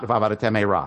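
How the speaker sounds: words slurred and run together. Showing students the wrong way to say the phrase: slurred together.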